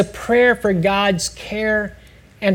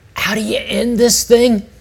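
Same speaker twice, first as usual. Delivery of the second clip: sheepish, embarrassed, small, slightly husky voice; 2 semitones higher than usual. Retelling what a man said after opening one eye, imitating his embarrassed husky voice. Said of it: "in his slightly embarrassed little husky voice".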